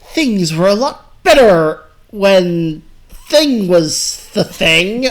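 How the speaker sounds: indignant, pointed phrasing, leaning on each word. Asked to voice a character, giving his line in Killigan voice, indignant and pointed. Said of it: "The indignant, pointed phrasing".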